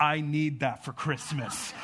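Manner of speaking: acted out grave, dead-serious, very low voice. Father retells his child's request after a toy commercial: imitating child's very serious tone. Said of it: "this very serious tone and look".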